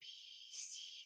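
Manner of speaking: soft, unvoiced whisper.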